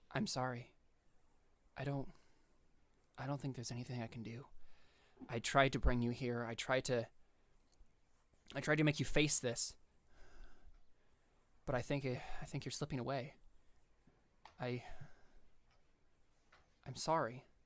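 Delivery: near tears. Voicing Raya apologizing to Darius, who is slipping away: tearful. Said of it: "a tear running down her face".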